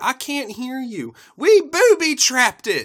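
very high, loud, slow yell.

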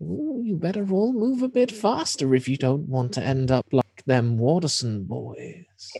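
put-on old woman voice chuckling, with swooping pitch. Voicing the old lady rocking back in her chair: chuckling old lady. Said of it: "starts to chuckle and says".

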